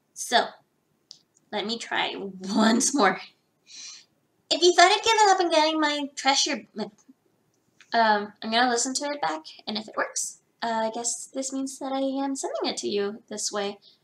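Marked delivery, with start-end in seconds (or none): 4.5-6.7 annoying, sassy voice, high-pitched and loud. Recording a voice-acting line, annoying and sassy: Baby Bowser voice. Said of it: "very annoying and sassy".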